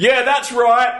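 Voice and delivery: yelling out, slow and loud. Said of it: "he yelled out".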